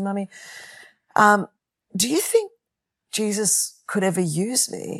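put-on slow, tearful voice. Retelling a daughter's question after she came back: imitating Catherine in tears. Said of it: "coming back in tears".

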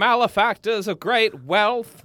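slow 1940s man voice. Asked to hear more, doing the FDR impression again. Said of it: "Let me hear a little more".

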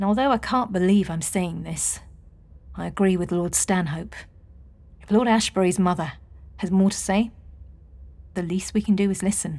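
ordinary delivery

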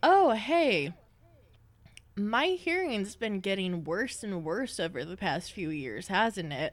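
plain

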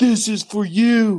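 put-on drunken shouting. Retelling a drunk man yelling out the door, acting out a drunk yell. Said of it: "He's all hammered".

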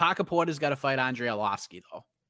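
Bostonian accent. Picking a fight another speaker wants to see: Boston accent. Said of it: "that Boston accent".

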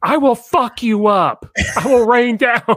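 very high, slow, drawn-out yelling. Imitating a fat-suit character yelling at Thor: imitating Tom Cruise yelling. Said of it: "just yells at Thor on the thing".

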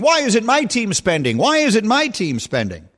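put-on frustrated shouting, high-pitched yelling, screaming. Imitating listeners yelling at the radio about their team: imitating listeners screaming at radio. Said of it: "screaming at the radio saying".

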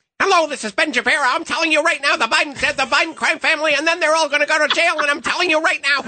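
very high, squeaky helium-like auctioneer-style fast patter. Imitating a radio host the other speaker just named: Ben Shapiro impression. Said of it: "I don't think it's fast enough".

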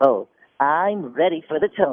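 slow, unhurried, squeaky cartoon voice. Asked by an interview host to answer in character, SpongeBob voice. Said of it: "SpongeBob in character".

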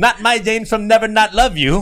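put-on Filipino accent, very high and loud. Repeating a line to show off an accent: filipino accent. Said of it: "That's my Filipino accent".

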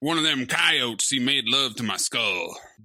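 deep Western character voice. Speaking about the coyotes in the movie, in a Rooster Cogburn voice. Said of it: "I am not locked into this Rooster Cogburn".

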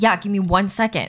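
put-on aggressive tone. Retelling how he answered when asked to pass a water bottle, imitating an aggressive tone. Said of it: "this like tone of voice that was just like aggressive".

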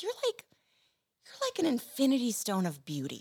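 feigned earnestness. Retelling what her husband Patton said to her, the speaker is earnestly quoting Patton. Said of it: "he says it so earnestly".

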